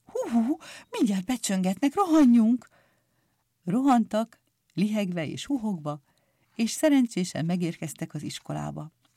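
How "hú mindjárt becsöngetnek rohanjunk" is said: scared, startled, frightened, high-pitched. Picúr glances at the watch and speaks to a friend, frightened. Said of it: "Picúr az órájára nézett ijetten".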